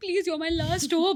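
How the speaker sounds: put-on weeping voice. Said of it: "And I'm weeping and weeping".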